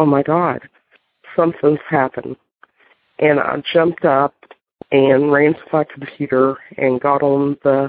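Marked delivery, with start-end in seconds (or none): none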